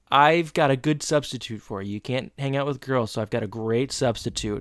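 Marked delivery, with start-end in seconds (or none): none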